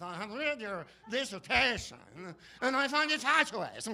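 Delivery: fake Croatian accent, high and loud. Describing an actor's role in a movie, doing his accent: Ken Mars fake Croatian accent. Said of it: "does an accent like this".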